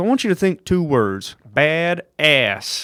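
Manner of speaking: put-on thick Southern accent. Retelling what a man from Texas said about his son: imitating Tim James's thick Southern accent. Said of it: "thick Southern".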